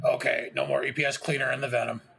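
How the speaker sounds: slow, grumbled mutter under the breath. Voicing a character reacting to what he watches: muttering under his breath. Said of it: "Trog mutters under his breath".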